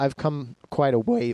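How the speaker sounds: voice breaking. Show host reflects on how far they've come since starting, voice cracking. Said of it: "My voice is cracked".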